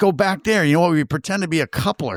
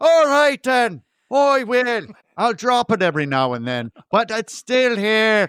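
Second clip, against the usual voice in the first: put-on, pitched-up Irish brogue; 6 semitones higher than usual. Asked whether he has done one before, showing off an Irish accent. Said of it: "have you done an Irish accent before? Well, sure. Sure, well, just do just do that".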